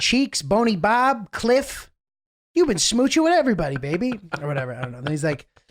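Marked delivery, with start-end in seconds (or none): 0.0-4.2 put-on heavy Chicago gangster accent, pitched up. Quoting a guy from the sequel, in a thick chicago accent. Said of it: "the guy has like a very thick Chicago accent".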